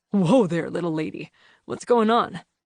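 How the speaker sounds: deep, rumbling bass voice from the chest. Narrator reads the line of someone catching a stumbling woman, in a deep rumbling bass voice. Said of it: "The deep bass voice rumbled".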